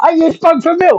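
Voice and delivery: high, sudden blurted outburst. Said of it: "the guy goes".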